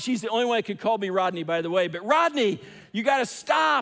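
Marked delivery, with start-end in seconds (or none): 1.9-3.8 raised high-pitched yell. Speaker retells a woman yelling at him as she approaches, retelling her yelling. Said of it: "as she's yelling".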